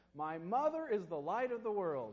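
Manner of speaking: strong, loud, clear, high-pitched delivery. A pastor retells a child saying a cued line aloud: loud, clear voice. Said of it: "a loud, clear voice said".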